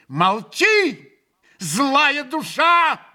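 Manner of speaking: fierce, furious, high-pitched angry shout. A character answers a mocking remark from a man: furious shout. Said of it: "яростно крикнул ему Грушенька".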